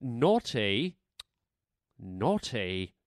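naughty said in put-on British accent. Speaker repeats a word the way the British say it, imitating a British accent. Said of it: "I love the way the British say it".

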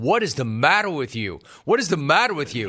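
plain

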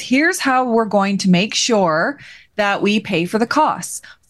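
plain

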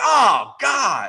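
play-acted fed-up, frustrated yell, high. Retelling his bad golf shot and yelling at himself: retelling his own yell. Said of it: "Just yelling".

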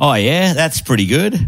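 exaggerated, played-up Australian accent, high and swooping. Answering a request to hear the accent ramped up: ramped-up australian accent. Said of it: "let's hear it ramped up".

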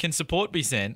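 plain

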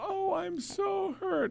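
very high, very slow, tiny, hurt little voice. Mocking a public figure's testimony voice: mocking Blasey Ford's hurt voice. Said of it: "That little, ... voice".

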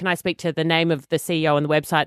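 ordinary talk, nothing marked

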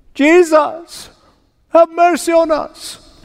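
put-on high, drawn-out pleading yell from far off. Retelling how the ten called from a distance: imitating a yell for mercy. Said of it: "they yelled out".

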